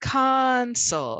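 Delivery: console with first syllable con loud and long. Teacher demonstrates word stress in the noun console, stress on con. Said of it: "and it's louder and longer".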